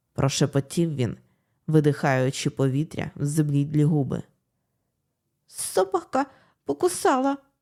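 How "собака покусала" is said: high and almost inaudible. A narrator reads a frightened girl answering a man gripping her neck, barely audible. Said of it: "ледь чутно відповіла дівчина".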